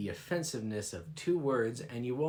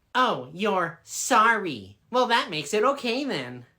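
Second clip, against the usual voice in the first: curt, snippy, very loud and high-pitched; 8 semitones higher, 8 dB louder than usual. Answering an apology at the Gates of Judgment: snippy. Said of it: "There's no need to get snippy with me".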